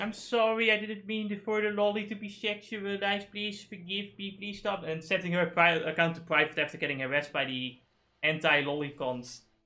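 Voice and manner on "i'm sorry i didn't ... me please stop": high-pitched, pleading, apologetic tone. Retelling how a VTuber first reacted to harassment: imitating Kyoto apologizing. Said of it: "she started out, like, going".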